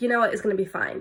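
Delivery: ordinary delivery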